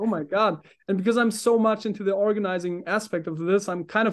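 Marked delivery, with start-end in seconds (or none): 0.0-0.6 thrilled, awed, excited outburst. Acting out own reaction to hearing the project described: acting out own excited reaction. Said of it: "I'm getting really excited".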